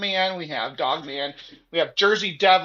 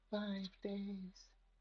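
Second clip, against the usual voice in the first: put-on very soft, hushed horror-film little girl voice; 3 semitones higher, 21 dB quieter than usual. Reading a script aloud, doing the little girl from The Ring voice. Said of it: "in the little girl from the Rings voice".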